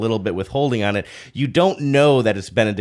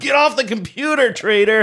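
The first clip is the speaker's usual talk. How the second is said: play-acted very high, shrill shout, sounding distant, background; 12 semitones higher than usual. Retelling a line from a commercial: imitating a yell. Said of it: "Somebody just yells in the background".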